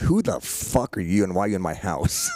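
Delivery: mock scornful, hostile, swooping, disdainful tone. Retelling being looked at on walking into the house: imitating disdain. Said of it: "he looks at me with this disdain".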